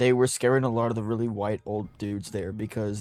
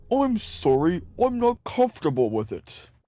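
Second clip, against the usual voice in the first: put-on slow, swooping British accent, words drawn out; 8 semitones higher, 3 dB louder than usual. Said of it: "That was a good accent".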